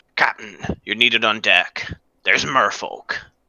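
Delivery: gruff, rough, growled-out voice. Game narrator voices Zondrash waking Orin for night watch, growling out. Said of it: "he just growls out".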